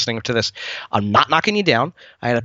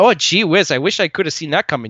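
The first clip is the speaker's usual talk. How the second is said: put-on Midwestern accent from Wisconsin; 2 semitones higher than usual. Critiquing a scene where Beru Lars speaks from the dead: Beru Lars impression, Wisconsin accent. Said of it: "She really sounded like she should have been like from Wisconsin".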